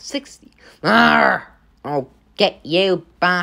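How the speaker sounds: ordinary delivery, nothing marked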